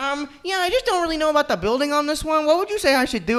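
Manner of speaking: crazed cartoon voice, very high and very loud. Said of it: "insane cartoonish voice I've ever heard".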